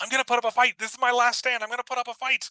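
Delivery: shrill, very high-pitched yell. Narrating a character smashing tables with a billy club, yelling. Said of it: "he's yelling like".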